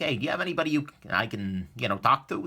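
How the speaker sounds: ordinary talk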